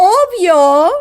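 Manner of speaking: obvio said with heavy, punched stress. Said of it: "please say it with a lot of emphasis".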